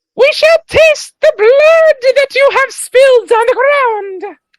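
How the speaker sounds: shrill, very high, very loud goblin voice. Voicing the goblins again after the mic cut out: very goblin-esque voice. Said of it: "Let's try this again".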